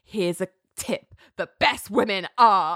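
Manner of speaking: put-on snarling voice. Retelling Ali's parting line before walking away: imitating someone snarling. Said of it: "and snarls".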